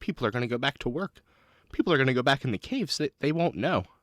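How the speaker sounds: horrified outburst, voice full of horror. A player voices Susanna reacting as the alarms stop: Susanna, horrified. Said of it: "looks up horrified and goes".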